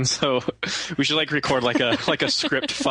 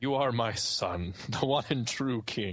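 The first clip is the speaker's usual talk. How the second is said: very slow delivery, each word dragged out; 3 semitones lower, 8 dB quieter than usual. Retelling a scene where Mufasa speaks: Mufasa voice. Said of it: "Ah, Mufasa, you got the wrong movie".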